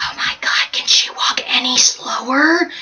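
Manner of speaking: slow, drawn-out whisper under the breath. Retelling what an old woman said to her husband behind them: imitating a whisper. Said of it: "whispers to him".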